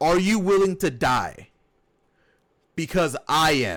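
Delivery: ordinary delivery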